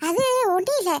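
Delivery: plain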